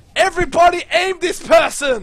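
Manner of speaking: high, loud screamed call.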